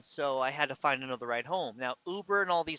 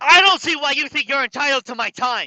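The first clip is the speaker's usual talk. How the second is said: very high, very loud yelling; 12 semitones higher, 15 dB louder than usual. Doing an impression of a woman, very loud, like shouting. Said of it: "I'm going to do the best impression of her that I can. ... It's going to be loud".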